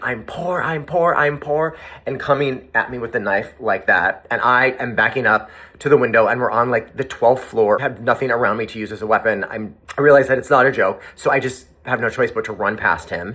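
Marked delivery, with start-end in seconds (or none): 0.0-1.8 put-on, mildly frantic, drawn-out scream. Retelling an attacker coming at them with a knife: imitating someone screaming. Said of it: "He just started screaming".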